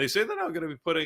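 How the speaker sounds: voice cracking, breaking high mid-sentence. Explaining new payment fees to listeners, voice cracking mid-sentence. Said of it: "my voice is cracked".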